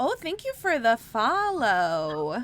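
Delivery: heavy Midwestern accent, booming, very loud and swooping. Talking with another speaker, slipping into a little midwestern accent. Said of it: "I went a little Midwestern there".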